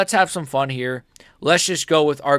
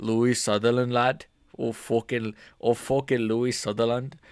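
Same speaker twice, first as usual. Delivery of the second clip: put-on failed Scottish accent, quieter; 3 semitones lower, 5 dB quieter than usual. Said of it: "I can't do a Scottish accent".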